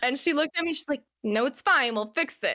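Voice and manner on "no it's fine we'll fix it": put-on rude tone, slower. Speaker retells a woman's answer to her complaint: imitating a rude reply. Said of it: "she's really rude".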